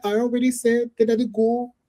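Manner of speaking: put-on high-pitched, slow, drawling Irish accent. Imitating Cho Chang saying she already chose someone: imitating Cho Chang's Irish accent. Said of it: "That's just how she sounded".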